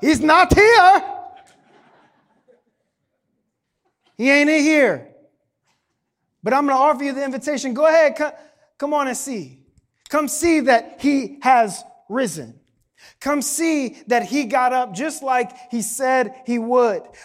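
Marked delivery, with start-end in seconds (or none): 0.0-5.1 loud, raised, belted-out cartoon baboon voice. A speaker hears the line in Rafiki's voice and performs it, Rafiki voice. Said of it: "I can't help but hear that in Rafiki's voice".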